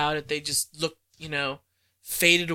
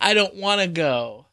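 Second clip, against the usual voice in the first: put-on sobbing young child voice, higher pitched; 3 semitones higher than usual. Acting out an ad-libbed film line when asked: imitating Peter Parker sobbing. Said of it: "crying, sobbing".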